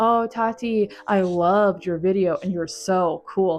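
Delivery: obvious, slow, dripping sarcastic tone. Showing viewers a comment to leave if they hated the video: sarcastic. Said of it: "say it in, like, a sarcastic way".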